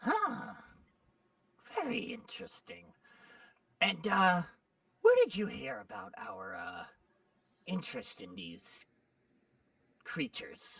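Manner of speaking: irritated goblin voice with swooping pitch. Voicing a goblin annoyed by cats being offered: annoyed goblin voice. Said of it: "He goes".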